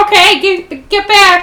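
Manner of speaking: very high, loud, stretched-out, drawn-out hollering. Speaking in character, telling everyone to get back again: yelling. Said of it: "I just yell".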